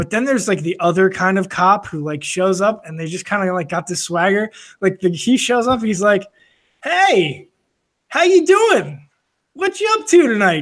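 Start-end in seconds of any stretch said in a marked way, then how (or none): 6.8-10.6 put-on breezy, overly friendly, high sing-song voice. Describing a calm cop arriving on a call, the speaker imitates a super friendly cop. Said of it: "Just like super friendly".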